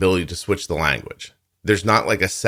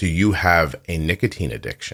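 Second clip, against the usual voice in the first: put-on very serious tone. Retelling a stranger's question to her daughter at a party, imitating a very serious tone. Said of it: "she looks at her very seriously".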